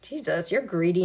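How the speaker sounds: plain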